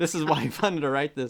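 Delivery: ordinary delivery, nothing marked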